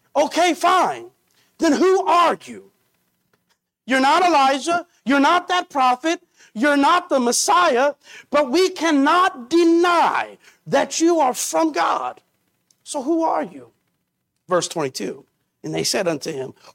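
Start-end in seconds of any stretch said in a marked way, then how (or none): 0.1-13.7 exasperated, frustrated tone, pitched up. Retelling what the questioners asked him, acting out frustrated questioning. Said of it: "you can almost sense the frustration in their voice".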